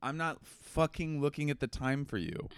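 mock dead-serious, annoyed, irritated tone. Retelling what the partner said when asked the time: imitating partner's serious snap. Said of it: "It was a serious".

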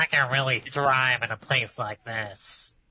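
nasally put-on voice. Voicing mold in a fridge, in a Squidward voice. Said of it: "You're both Squidward".

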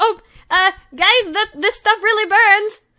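shrill, very high, very loud panic. Voicing Letty as the burning vial hits her: freaking out. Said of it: "just, like, freaking out, she's like".

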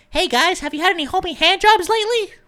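very high, shrill, squeaky voice, very loud. Imitating someone talking on an Xbox headset, in a little squeaker voice. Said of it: "with your little squeaker voice".

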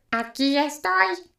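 ringing, metallic-toned voice. Narrator reads the telegraph answering the wind's call, in a metallic tone. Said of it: "exclamó con acento metálico".

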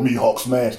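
put-on dumb, angry monster voice. Describing how they talk when mad: Hulk voice. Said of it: "I probably talk like an idiot when I'm mad".

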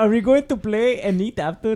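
put-on Arabic accent. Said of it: "an Arabic voice".

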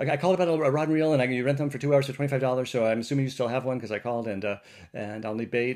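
rapid-fire. Retelling what they said to the woman at the register, very fast. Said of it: "I said very quickly".

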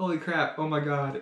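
ordinary talk

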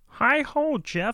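imitated frog puppet voice. Leaving a phone message for a guest, joking: Kermit the Frog voice. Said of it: "This is Kermit the Frog".

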